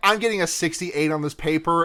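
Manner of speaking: ordinary talk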